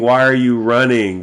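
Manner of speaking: acted scream. Describing an AI storyline, the speaker acts out a character's line, retelling a scream. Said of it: "He's screaming".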